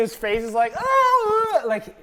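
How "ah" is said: high scream in total fear. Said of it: "total fear".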